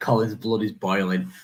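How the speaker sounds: ordinary talk, nothing marked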